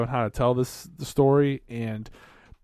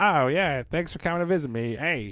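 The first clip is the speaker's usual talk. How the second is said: put-on casual London Cockney accent. Acting out the oppressed characters from a film: imitating Cockney accent. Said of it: "they had the Cockney accents".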